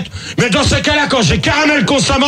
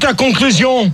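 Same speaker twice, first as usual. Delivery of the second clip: ordinary talk, nothing marked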